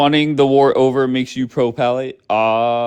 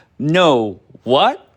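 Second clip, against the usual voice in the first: playful, innocent-sounding, light and caught-out; 2 semitones higher than usual. Explaining Daniela's tell when she is trapped, quote her in a high-pitched voice. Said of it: "Like in a high pitched voice".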